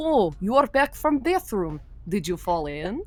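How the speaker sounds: dry, heavy put-on Russian accent. Imitating a woman greeting someone back from the bathroom, in a deadpan thick Russian accent. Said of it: "she had a thick Russian accent".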